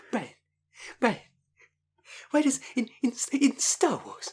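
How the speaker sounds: whispery, breathy, stumbling put-on voice, tripping over words. Mocking the other speaker's bad impression: mocking Stewie impression. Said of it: "That's partly me struggling".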